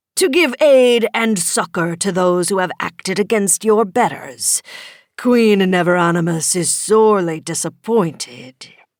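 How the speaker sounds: loud, growling dragon character voice. Reading a story where a dragon speaks through its rider, Tiendromos the dragon growling. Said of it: "Is it not treason? [name] the dragon asked, using Jamie's mouth. / the dragon growled".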